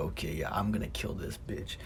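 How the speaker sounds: put-on laughing while talking. Retelling what she said on finally reaching her, retelling laughing while talking. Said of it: "I literally laughed like".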